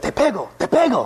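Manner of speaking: very slow, high, stretched-out, drawn-out cry. Retelling what a man yelled out at the speaker: retelling a yell. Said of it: "he yells out".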